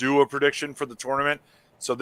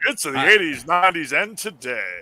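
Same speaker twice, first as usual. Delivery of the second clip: put-on radio announcer voice, pitched higher; 4 semitones higher than usual. Showing they did radio, putting on a radio dj voice. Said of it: "I can put the voice on".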